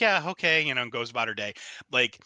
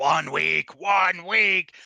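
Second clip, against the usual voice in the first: put-on, very slow, high, loud, drawn-out cackle; 6 semitones higher, 6 dB louder than usual. Pitching a story scene where a voicemail plays: cackling voice. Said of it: "the cackling voice of".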